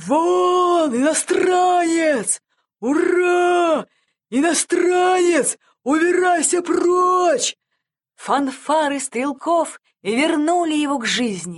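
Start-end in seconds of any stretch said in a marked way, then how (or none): 0.0-7.6 high, gleeful shout with long drawn-out 'Ура'. An old patriot, stirred by the marching fanfares, shouts joyfully. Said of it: "радостно закричал он".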